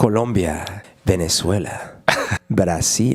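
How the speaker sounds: South American Spanish pronunciation. Asked to say country names with a Latin flavor, Latin-flavored pronunciation. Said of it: "say the South American countries with your Latin flavor".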